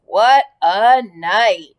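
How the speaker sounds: husky voice. A narrator reads a rat collapsing in the corner of the pen, in a husky voice. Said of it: "he said in a husky voice".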